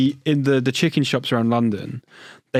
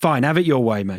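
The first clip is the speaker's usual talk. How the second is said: ordinary talk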